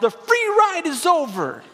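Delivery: put-on shrill sitcom-dad outburst, high, drawn-out, swooping. Retelling a TV show father turning to his kids, imitating his yell. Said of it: "he yells".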